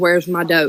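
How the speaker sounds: usual speaking voice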